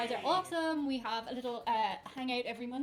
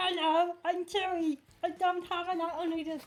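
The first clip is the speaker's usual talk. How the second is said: put-on loud, high-pitched Irish accent; 6 semitones higher, 5 dB louder than usual. Asked what Chewie's Irish accent sounds like, the speaker does Chewie with Irish accent. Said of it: "what's Chewy's Irish accent?".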